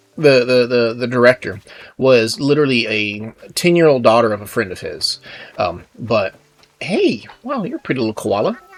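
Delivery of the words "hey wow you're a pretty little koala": botched put-on female Australian accent, high, swooping. Trying out a line, in a failed female Australian accent. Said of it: "I was trying to do a female Australian accent".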